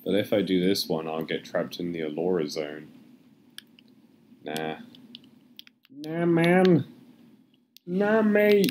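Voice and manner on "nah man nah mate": put-on, silly, very high, swooping college lad voice. Slipping back into a put-on voice the speaker used in college. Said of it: "That voice, I used to use that voice in college".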